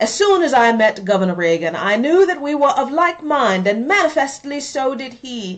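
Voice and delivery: bad, terrible fake British accent. Reading out a quote from a Thatcher speech, in a horrible Thatcher accent. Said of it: "horrible British Thatcher accent".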